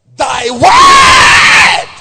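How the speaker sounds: shouting. Answering own question about the light used: shouting. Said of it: "Forgive me for shouting".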